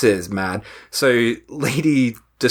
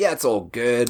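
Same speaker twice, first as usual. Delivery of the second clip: fake cheerful voice. Retelling how Chris feels now: imitating happy Chris. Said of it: "who's all happy now".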